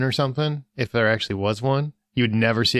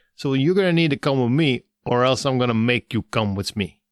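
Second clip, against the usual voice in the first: put-on voice with a strong Jersey accent. Picturing how the Grim Reaper would sound: Grim Reaper as a Jersey guy. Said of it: "a guy from Jersey who's just like".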